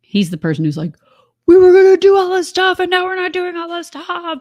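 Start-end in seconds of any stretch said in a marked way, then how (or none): 1.4-4.4 very high, loud, worked-up angry grumbling. Retelling how he complains when plans change: imitating someone getting mad. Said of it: "And he gets mad".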